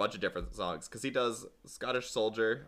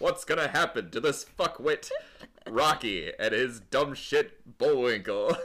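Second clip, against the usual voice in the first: wrestling ring-announcer style delivery; 4 dB louder than usual. Showing another person what he sounds like, do a sweary Rocky and Bullwinkle teaser in a Mean Gene voice. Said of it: "That's Mean Gene".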